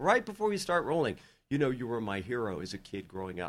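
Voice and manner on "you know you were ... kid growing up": quiet voice, even quieter. An actor recalls the director's words before an arrest scene: retelling quiet words. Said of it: "he just says very quietly".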